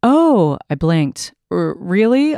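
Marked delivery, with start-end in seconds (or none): 1.5-2.4 stuttering, higher pitch. The narrator answers the president's declaration of love: stuttering. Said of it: "I stuttered".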